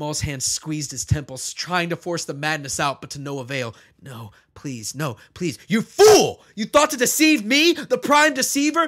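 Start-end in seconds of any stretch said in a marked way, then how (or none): 5.7-8.9 very high, very loud, shrill, echoing, otherworldly roar. Narrating a story, the prime deceiver turns on Maul: otherworldly roar. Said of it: "the prime deceiver? ... He let out an otherworldly roar that seemed to echo within Maul's chest".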